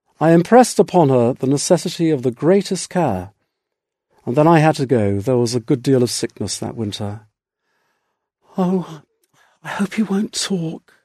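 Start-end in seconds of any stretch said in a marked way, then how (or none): 8.6-10.8 soft, hushed, restrained little exclamation. Narrator reads a woman calling after him as he leaves, soft exclamation. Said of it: "she exclaimed softly".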